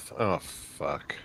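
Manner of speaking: barely audible whispered mutter under the breath. Voicing a character reacting in dismay: muttered under his breath. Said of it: "say under his breath".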